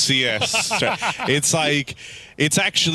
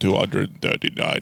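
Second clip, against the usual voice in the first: wild, crazy, extra-deep speaking voice; 6 semitones lower than usual. Imitating a man speaking english to tell you the page number, in a crazy deep voice. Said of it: "in his crazy deep voice".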